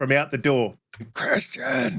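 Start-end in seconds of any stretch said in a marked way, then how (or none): 1.1-2.0 very high whispered shout. Retelling a brother calling from the door: imitating a whisper-yell. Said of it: "whisper yelling".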